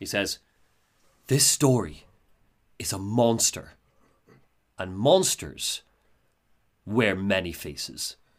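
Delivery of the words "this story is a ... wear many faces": put-on whisper, lower pitch. Retelling a trailer in which Alan speaks, imitating Alan whispering. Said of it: "and he whispers it".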